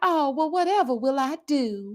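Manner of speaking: put-on flirty, helpless Southern belle voice. Retelling the reply to the it man about the mouse: southern belle voice. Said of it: "I was getting my Southern Belle on".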